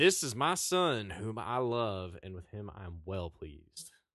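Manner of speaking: projected, slow, declaiming delivery. Reading the part where God speaks from heaven, in a projected God voice. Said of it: "That's what God sounds like".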